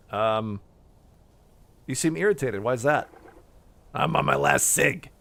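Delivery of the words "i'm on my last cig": put-on gruff, growling, rough old wolf character voice. Voicing an old wolf answering Sniff, in a growly old wolf voice. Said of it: "He's a growly old wolf".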